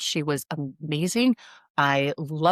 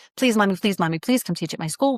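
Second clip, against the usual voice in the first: put-on pleading child voice; 2 semitones higher than usual. Retelling how a daughter begged to have her teach at school: imitating a child begging. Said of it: "my daughter was begging me".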